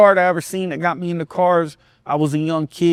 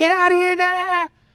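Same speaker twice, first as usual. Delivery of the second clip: play-acted screaming, very high-pitched yelling; 13 semitones higher than usual. Retelling how an aunt chased a visitor away: imitating someone yelling. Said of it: "she starts yelling, screaming at the guy".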